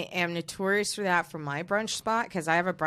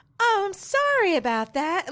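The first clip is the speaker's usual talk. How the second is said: very high, bright, swooping, chirpy cheer; 6 dB louder than usual. Speaker shows the voice used with snippy people, imitating own chirpy voice. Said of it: "I would just like get real chirpy".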